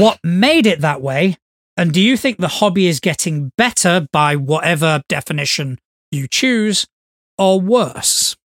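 plain

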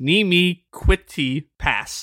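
very slow French mangled by American accent. Joking about how americans say a french phrase, american accent on french. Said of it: "Or as an American would say it, because we suck at other languages".

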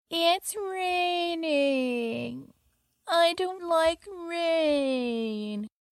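put-on very slow, high-pitched, drawn-out whiny little-kid voice. Retelling how a grown woman complained about the rain, imitating a whiny child voice. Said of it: "a very whiny child voice that a grown woman was using".

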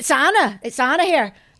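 put-on loud, sudden Irish accent. Retelling what she said when she answered the call, in an accidental Irish accent. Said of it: "oh, it's Irish".

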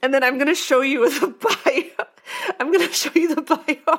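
words bubbling through laughter. Showing the audience an article that seems AI-written: laughing while talking. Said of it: "Sorry, I'm laughing so much".

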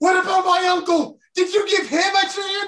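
outright high, loud yell. Retelling a story, the speaker quotes what a man yelled: retelling a yell. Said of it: "He yells".

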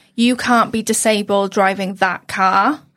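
ordinary talk, nothing marked

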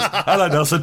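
very high-pitched voice. Retelling how a son greets the cat: son's Jim impression. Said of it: "He goes".

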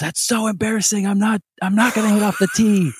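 mock shrill, very high child yelling. Retelling a kid's reaction during batting practice: imitating Nate yelling. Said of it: "he just yells".

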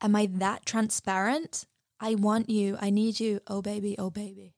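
mock flat, monotone delivery. Retelling a film character's reply to a flirt: imitating a monotone delivery. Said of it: "so monotone".

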